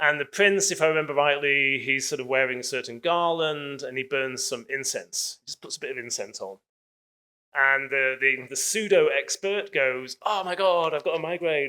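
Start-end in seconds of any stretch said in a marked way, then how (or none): 10.2-11.7 high-pitched, alarmed, panicky, freaked-out outburst. Retelling a story in which a pseudo expert claims a migraine: mock freaking out.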